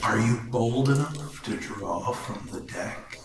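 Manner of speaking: eerie, ghostly, spectral voice. Voicing a deck of cards offering the players a draw, in a spectral voice.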